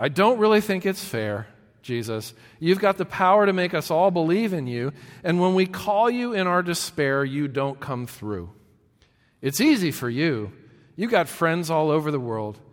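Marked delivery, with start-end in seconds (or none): none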